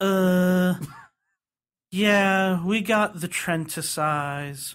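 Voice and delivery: drawling delivery. Retelling how a woman answered the speaker's question, in a slow drawl. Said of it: "like just slow, like a drawl".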